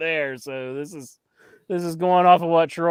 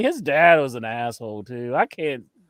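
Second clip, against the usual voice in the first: normal talking voice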